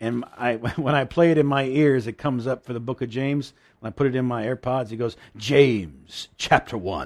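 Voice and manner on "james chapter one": put-on very strong British accent, low and drawn-out. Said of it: "speaks the King James in this very strong British accent".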